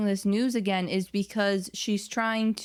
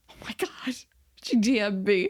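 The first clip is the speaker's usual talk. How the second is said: put-on stunned, totally panicked, slow, drawn-out outburst. Retelling the other speaker's reaction to a DM: imitating someone panicking. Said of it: "you totally panicked".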